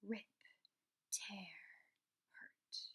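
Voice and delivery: chilling, menacing, creepy whisper. Reading a story aloud, voicing a mysterious voice heard in a passageway: cold, scary voice. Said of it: "the same cold, scary voice".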